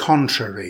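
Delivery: CON-trary, first syllable stressed, falling close. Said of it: "Stress the first syllable".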